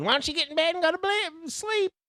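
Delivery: shrill, nagging, very high rising yell. Retelling how the nurse kept telling him to go to bed: imitating someone yelling. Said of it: "She just kept yelling".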